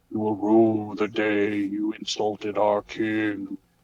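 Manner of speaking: ominous, frightening, threatening voice. Confronting the kids who made fun of the king: scary voice. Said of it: "in a scary voice".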